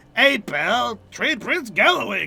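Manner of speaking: put-on goblin voice, Boston accent sliding into Cockney. Explaining a messy accent used for the goblins, demonstrating the goblin voice, Boston-Cockney mix. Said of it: "I was doing the the the the goblins".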